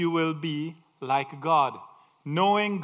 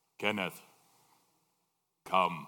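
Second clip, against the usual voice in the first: bellowing voice, much lower; 15 dB quieter than usual. Asking what God sounds like, the speaker answers in a big bellowing voice of God. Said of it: "Is it a big, bellowing voice?".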